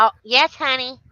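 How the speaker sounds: put-on angry voice. Answering a call for Jenny in character: angry Jenny voice. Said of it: "I'm doing angry Jenny".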